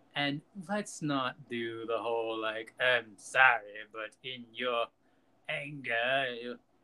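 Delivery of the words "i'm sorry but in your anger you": slow, mock dramatic movie-style delivery. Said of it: "See, I did it".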